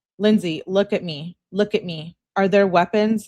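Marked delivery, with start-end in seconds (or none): none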